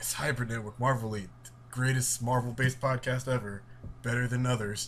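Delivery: ordinary delivery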